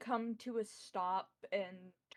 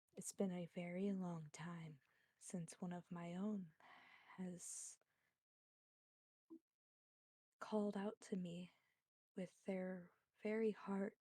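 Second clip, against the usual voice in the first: soft, gentle, low tender voice, quieter; 7 dB quieter than usual. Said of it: "she's goes".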